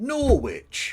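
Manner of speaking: "Norwich" said high in an American accent. Pronouncing the place name norwich in an american accent. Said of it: "I'm going to pronounce this like an American".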